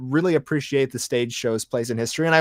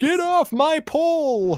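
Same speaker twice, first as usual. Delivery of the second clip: put-on grumpy older man grumble, very high, very slow, drawn-out pole. Continuing a joke about a pissed-off boomer Santa Claus: mock pissed-off Santa Claus. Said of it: "wanna know why he's a pissed off Santa Claus?".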